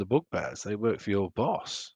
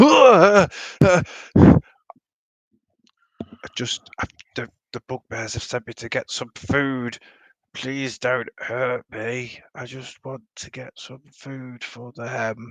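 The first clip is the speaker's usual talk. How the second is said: loud, frightened goblin voice, stumbling over words; 3 semitones higher, 7 dB louder than usual. Narrating the scene as the goblin appears and speaks, frightened goblin voice. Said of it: "as the goblin that you saw faint appears, and he goes".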